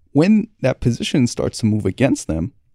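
normal talking voice

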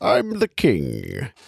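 bad, creaky, rough Scottish accent, words dragged out. Imagining an actor walking onto a film set as the king, bad Sean Connery impression. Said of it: "That's a terrible Sean Connery".

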